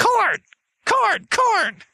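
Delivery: very high, swooping, cawing crow voice. Joking with the group about crows, crow voice. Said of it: "You do a very good crow accent".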